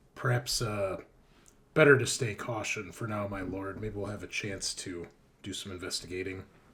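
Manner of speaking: very low, hushed, secretive half-whisper. In character, advising his lord so only he hears: half-whispering. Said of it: "I'll kind of just whisper like".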